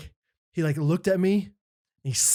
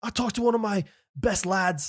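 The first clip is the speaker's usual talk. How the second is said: clumsy, bad put-on Australian accent; 4 semitones higher than usual. Retelling what a preacher said: imitating John Tyson in a bad Australian accent. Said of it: "I'm doing such a bad Australian accent".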